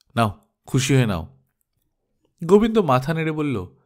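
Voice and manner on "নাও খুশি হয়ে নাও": slightly scolding, mildly rebuking tone. Reading a story aloud, a character hands over a note: slightly scolding tone. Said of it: "একটু ধমকের সুরে বলল".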